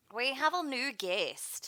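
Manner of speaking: put-on slow, high-pitched Aussie accent.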